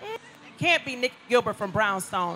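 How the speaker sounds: ordinary delivery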